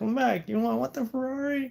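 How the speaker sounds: very high, carrying yell. Telling a story, the speaker re-enacts calling a lady back in the aisle, retelling a yell down the aisle. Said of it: "I'm like yelling in the aisle".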